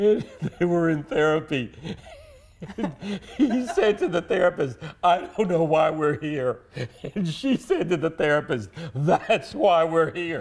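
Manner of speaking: talking through laughter. Telling a funny therapy story to another speaker, laughing while talking. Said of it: "I'm laughing because".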